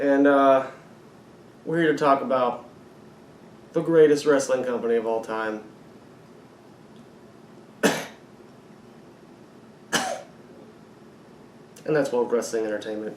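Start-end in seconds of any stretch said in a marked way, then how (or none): 1.6-13.2 sarcastic, over-hyped, dripping with sarcasm. Introducing a wrestling predictions show: sarcastic tone. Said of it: "catch the sarcasm in my voice".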